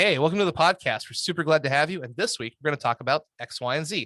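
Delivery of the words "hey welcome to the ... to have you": lively, upbeat, excited, fast, high-energy delivery. Welcoming listeners to a podcast, excited and high-energy. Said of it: "you want to have a lot of energy. You want to be excited".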